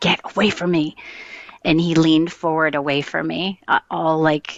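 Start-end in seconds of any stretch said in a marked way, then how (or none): 0.0-0.9 mock voice, as mean and nasty as possible. Retelling what he said while turning to face her: imitating a very mean voice. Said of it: "with the meanest voice".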